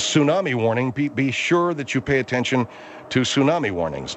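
ordinary talk

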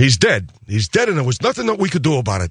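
tough-guy gangster mobster voice. Reenacting his bit from Goodfellas, breaking into a Goodfellas mob voice. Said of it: "breaking into the mob voice".

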